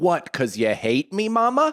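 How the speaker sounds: put-on sing-song, swooping, upward-lifting toddler voice. Retelling going into the mom's dark room as a two-year-old, in an upswing baby voice. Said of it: "the upswing baby voice".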